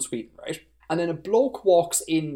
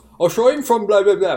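loud, terrible, put-on Irish accent; 6 semitones higher, 8 dB louder than usual. Retelling how he answered the big bad, in a terrible Irish accent. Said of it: "with this terrible Irish accent".

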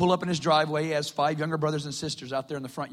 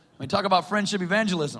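normal talking voice

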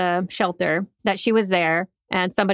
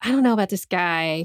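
put-on whisper. Retelling a hiker's warning to his companion at camp: imitating someone whispering. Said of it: "he kinda whispered to her".

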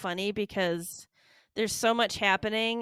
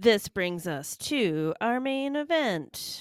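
sports ring announcer style delivery. Previewing upcoming matches with another speaker, slipping into an announcer voice. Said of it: "I started sounding like an announcer".

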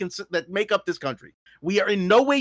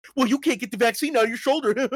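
fast, mock petulant, catty reality-TV-style sniping; 4 semitones higher than usual. Mocking how top politicians speak to each other, in mock catty snark. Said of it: "Like catty reality TV level".

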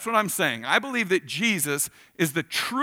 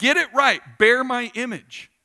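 put-on angry voice, higher and louder; 6 semitones higher, 4 dB louder than usual. Retelling God giving the people another chance: imitating an angry God. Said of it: "he's getting angry again".

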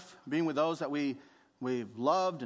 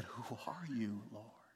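very quiet, cowering, barely audible voice; 5 semitones lower, 13 dB quieter than usual. Voicing a man answering a voice from heaven: imitating Paul cowering. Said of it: "you can hear Paul in this next line just cowering".

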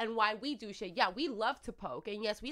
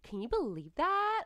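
put-on cutesy, high-pitched valley girl voice; 5 semitones higher than usual. Asking whether the way girls talk is cool, showing it; valley girl voice. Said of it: "And they talk like this".

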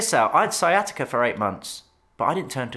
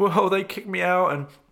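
mock crying, higher pitch; 6 semitones higher than usual. Retelling how a man in a documentary spoke: imitating someone crying. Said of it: "crying, going".

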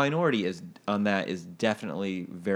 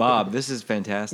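ordinary talk

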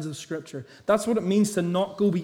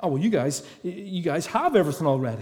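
acted, dry, sarcastic, ironic, overblown tone. Retelling Paul's words to boastful church members: imitating Paul's sarcasm. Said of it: "He uses the sarcasm".

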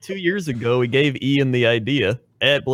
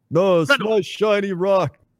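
dim, dumb ogre voice, pitched up high; 8 semitones higher than usual. In a group role-play, voicing one head of the ogre, Krendor ogre voice. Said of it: "do your ogre voice".

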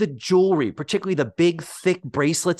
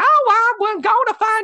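put-on high Southern woman's drawl, stretched by a man; 5 dB louder than usual. Talking about Blair suddenly turning Southern, the speaker imitates Blair's Southern accent. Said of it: "Blair has become a Southern woman suddenly".

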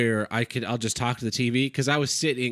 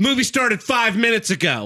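mock very high, loud, raised voice; 10 semitones higher, 5 dB louder than usual. Retelling what they said to latecomers passing them at a movie, saying it real loud. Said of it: "And then I said real loud".

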